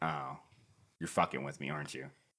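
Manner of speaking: low, quiet realization. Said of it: "finally Greg's like".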